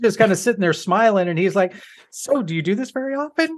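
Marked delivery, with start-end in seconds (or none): 2.1-3.6 put-on goofy, awkward flirty voice, pitched up. Retelling an awkward movie scene line: imitating an awkward grinning come-on. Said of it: "weird, awkward conversation he's having with this goofy grin".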